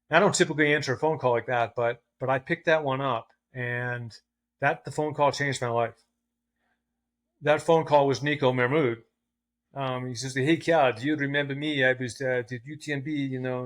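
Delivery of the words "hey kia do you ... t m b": put-on French accent. Retelling a life-changing phone call, the speaker quotes the caller: imitating Nico Mahmoud's French accent. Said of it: "it's this French accent".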